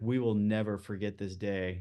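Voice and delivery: put-on tearful voice. Retelling what a dinner guest said with tears in his eyes: imitating a tearful voice. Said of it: "he said it with like tears in his eyes".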